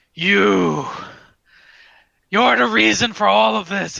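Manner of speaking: furious, very loud, rough rasping roar. Narrating a game scene, voicing Gundren as he turns on the half-orc, very angry. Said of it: "you hear a very angry Gundren go".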